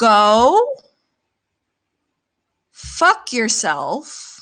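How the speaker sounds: very sweet, very slow, drawn-out go. Insisting on finishing, speaker tells someone off, really nice and really slow. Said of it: "gonna say this really nice and really slow".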